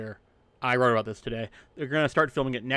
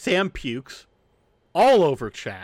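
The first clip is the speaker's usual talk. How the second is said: ordinary delivery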